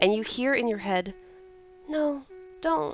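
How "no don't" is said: put-on small, high-pitched young child's voice. Voicing a plea heard in a player's head: child's voice. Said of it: "It sounded like a child's voice".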